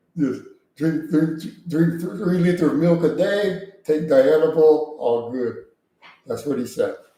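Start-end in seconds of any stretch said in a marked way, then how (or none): 0.8-5.6 put-on Polish accent. Repeating word for word what he said, in a polish accent. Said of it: "he said it in a Polish accent".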